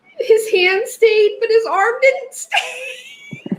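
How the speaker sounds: very high, swooping talk while crying with laughter. Reading a passage aloud while apologizing for laughing; laughing while talking. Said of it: "I'm crying laughing".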